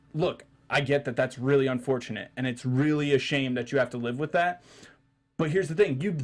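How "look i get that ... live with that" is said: ordinary talk, nothing marked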